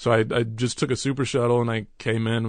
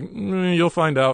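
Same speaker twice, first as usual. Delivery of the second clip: play-acted jittery, evasive, nervous voice, pitched up; 7 semitones higher than usual. Retelling own answer to strangers in line: imitating own nervous reply. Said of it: "I just got nervous and was like".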